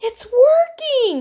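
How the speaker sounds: very high-pitched, loud exclaiming. As the boat starts to move, one of those being pulled in speaks, exclaiming. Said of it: "exclaimed Heidi".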